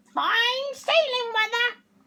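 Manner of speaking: very high talking-parrot voice. Reading a story aloud, redoing the line in the parrot's voice, parrot voice. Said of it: "Parrot's voice this time".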